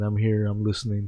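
ordinary talk, nothing marked

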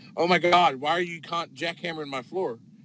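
worried, alarmed, fretting rich housewife voice. Retelling a customer's complaint about the floor: imitating a worried rich housewife. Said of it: "she's really concerned because she's just one of those rich housewives".

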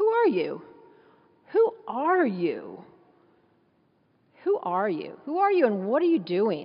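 mock haughty, arrogant, insistent, demanding tone. Retelling how they confronted John, in mock-arrogant questioning. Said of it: "You can just hear the arrogance in their voices".

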